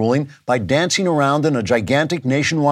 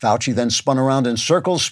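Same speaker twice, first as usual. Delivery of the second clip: normal talking voice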